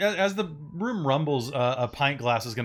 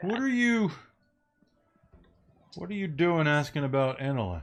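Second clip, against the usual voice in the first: put-on drunk character voice; 2 semitones higher than usual. Voicing the drunk from the coffee shop, questioning the players: voicing a drunk. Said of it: "The drunk from the coffee shop".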